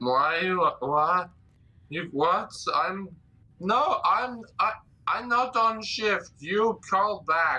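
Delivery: put-on drunken slurring. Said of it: "You are drunk".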